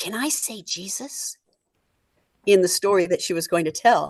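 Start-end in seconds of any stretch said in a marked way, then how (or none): 0.0-1.3 very quiet, hushed, slow, drawn-out whisper. Retelling a woman's question while setting up the Advent table, imitating a whisper. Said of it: "And she whispers to me".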